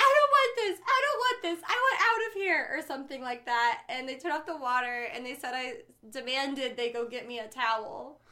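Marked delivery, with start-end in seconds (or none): 0.0-2.7 shrill, wailing, very high, loud screaming. Retelling screaming when water splashed on them, re-enacting a scream. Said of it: "I just started screaming".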